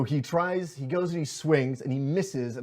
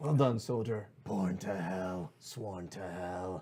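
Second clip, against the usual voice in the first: low, echoing, undead skeletal voice; 6 semitones lower, 6 dB quieter than usual. Voicing a skeleton after it takes damage in a game, echoey skeletal voice. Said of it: "in its echoey skeletal voice".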